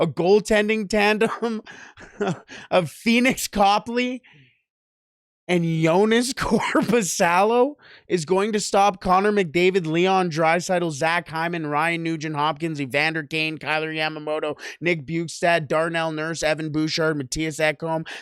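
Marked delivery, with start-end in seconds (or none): 0.0-9.8 talking through stifled laughter. Questioning whether a goaltending tandem can stop the Oilers: trying not to laugh. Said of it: "I'm trying not to laugh".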